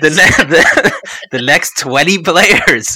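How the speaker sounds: laughing while talking. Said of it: "I'm laughing too much".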